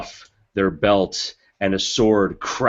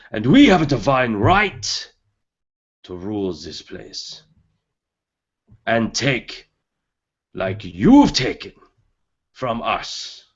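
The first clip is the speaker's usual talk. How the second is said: screaming, rousing rallying shout; 2 semitones higher than usual. Voicing a tiefling leader rallying soldiers before battle: screaming war speech. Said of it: "and he screams".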